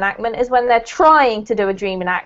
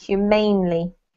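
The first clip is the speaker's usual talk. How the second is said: "humanely" with stress on "mane". Coaching a learner's pronunciation of a word, stress on mane in humanely. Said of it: "put the emphasis on the ain".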